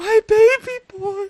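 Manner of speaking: acted, full-on ugly crying. Voicing a character who grabs a drawing of her son: voicing a full-on ugly cry. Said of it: "she starts crying, like a full-on ugly cry".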